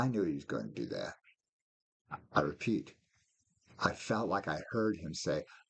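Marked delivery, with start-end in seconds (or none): 0.0-1.2 put-on chuckling through the words, amused. Retelling how god spoke from the throne: imitating god laughing. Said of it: "in a kind of a laughing voice".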